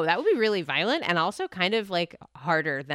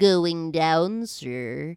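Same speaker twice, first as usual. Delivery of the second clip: put-on sad cartoon dog voice, much slower. Speaker showing others the cartoon dog's voice, doing a Droopy Dog voice. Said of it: "I never bring out my Droopy Dog".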